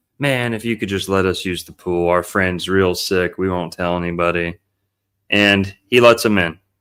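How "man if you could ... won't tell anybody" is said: ordinary talk, nothing marked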